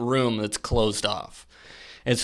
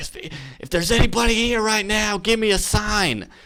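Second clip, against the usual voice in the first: put-on full-throated, loud, high-pitched top-of-lungs yell; 9 semitones higher than usual. Retelling how a buddy called out to ghosts: imitating a friend yelling loudly. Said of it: "he just yells out at the top of his lungs".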